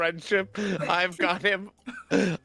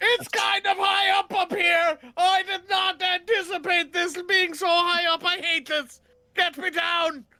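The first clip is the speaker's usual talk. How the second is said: very high, frightened screaming; 12 semitones higher than usual. A character who climbed high up a tree wants to get down: scared screaming up a tree. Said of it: "see me cr- climb up a tree and start screaming".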